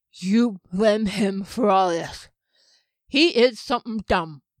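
words forced through stiff jaw. Janik, just coming out of a freeze spell, speaks to Derry, stiff-jawed, effortful speech. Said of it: "where [name] was just coming out of the spell that had frozen him in place. He flexed his hands and feet, and though he could move his jaw, it was stiff and the lips and tongue were not quite ready".

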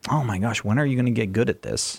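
ordinary talk

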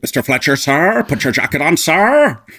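furious, building, loud, high angry barking. Doing the angry Hopkins as the captain scolding Fletcher: angry Anthony Hopkins impression. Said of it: "the angry Hopkins".

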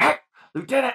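very high shout. Retelling shouting at a lieutenant who needed to stop: retelling yelling Lieutenant. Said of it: "so I just yelled at him".

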